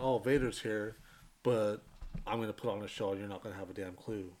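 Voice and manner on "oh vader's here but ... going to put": ordinary delivery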